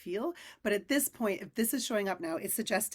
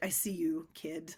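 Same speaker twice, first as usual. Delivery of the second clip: put-on tough cool older voice, lower and quieter; 4 semitones lower, 4 dB quieter than usual. Voicing a tarot card that speaks to the reader: tough, cool older person voice. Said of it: "tough, cool older person voice in my head".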